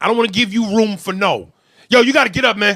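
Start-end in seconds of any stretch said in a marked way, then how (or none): 1.9-2.8 loud, stern, firm street-style voice. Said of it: "I put my street shit on it".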